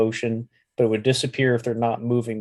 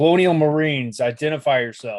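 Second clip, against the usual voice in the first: loud, barking military holler; 4 semitones higher, 5 dB louder than usual. Blaze hollers out at an unseen voice to identify itself; barking, commanding holler. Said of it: "holler out in a barking, commanding voice".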